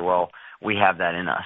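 ordinary delivery

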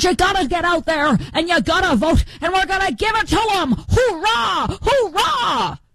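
energetic, high, bright rousing delivery. Talking about a Michigan primary candidate, doing a Haley Stevens impression. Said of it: "She's the lady who talks like this".

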